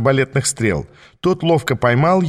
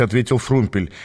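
plain reading voice

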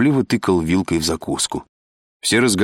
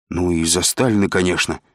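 usual speaking voice

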